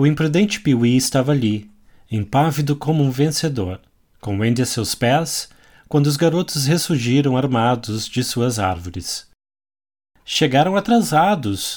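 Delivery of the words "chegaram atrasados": proud, exclaiming tone. A boy calls out to the other boys as they return armed, exclaiming proudly. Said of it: "exclamou orgulhoso".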